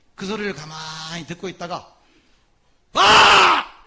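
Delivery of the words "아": sudden, very high, loud shout. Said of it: "이렇게 소리를 지릅니다".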